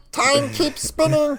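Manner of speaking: high, gloating gnome villain voice. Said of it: "the gnome Brome two claws up, and he's like".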